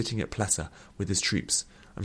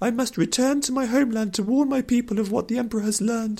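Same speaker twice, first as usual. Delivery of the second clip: lofty, refined, very high-pitched delivery; 14 semitones higher than usual. A companion teases Nuthea to her face by mimicking her; refined mock imitation of Nuthea. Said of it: "She put on a refined voice in mock imitation".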